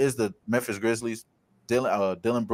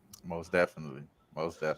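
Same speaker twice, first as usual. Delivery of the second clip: very deep, dropped voice; 7 semitones lower, 9 dB quieter than usual. Agreeing with a co-host about a betting pick: talking in a deep voice. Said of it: "she got me talking in a deep voice".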